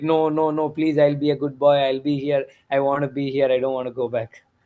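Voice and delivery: mock child voice, crying and pleading. Retelling how the kids beg not to go back: imitating kids crying and pleading. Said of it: "they keep crying like".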